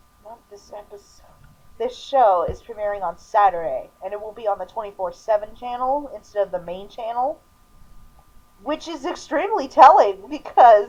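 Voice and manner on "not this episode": very quiet, breathy, whispered mutter under the breath. Speaker corrects himself while introducing the show, muttering.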